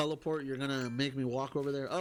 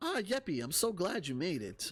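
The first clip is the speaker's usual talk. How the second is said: video game shop owner character voice; 4 semitones higher than usual. Speaker voices a character while pitching a game; Tom Nook voice. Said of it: "I was giving him uh, Tom Nook's voice".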